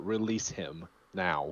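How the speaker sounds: low, authoritative, commanding voice. A player's character orders Bodar to release him, in a commanding voice. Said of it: "I'm like a commanding voice to Bodar".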